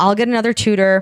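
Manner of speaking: ordinary delivery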